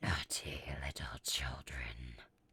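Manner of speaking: chilling, very deep, cold raspy voice. Reading a story aloud, voicing a creature studying stocking coal, cold, raspy voice. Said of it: "I heard it say in a cold, raspy voice".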